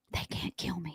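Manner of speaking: very quiet whisper under the breath. Retelling how a mother leaned down to a child: retelling a whisper. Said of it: "my mom leans down and whispers".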